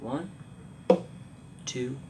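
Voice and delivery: slow, steady counting on the beat.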